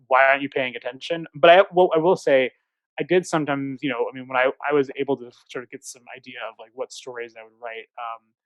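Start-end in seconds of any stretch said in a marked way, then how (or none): none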